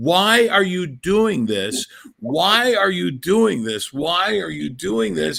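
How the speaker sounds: held-back, slow, mild repeated scream, dragged out. Recalling a childhood memory, voicing a man's wife screaming at him: imitating a scream. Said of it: "the wife kept screaming".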